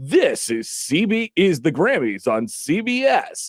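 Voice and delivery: big TV announcer voice. Describing a Grammys broadcast coming back from a break, in a big announcer voice. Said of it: "the big voice comes over and they go".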